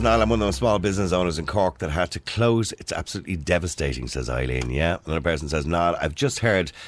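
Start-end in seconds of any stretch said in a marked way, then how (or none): none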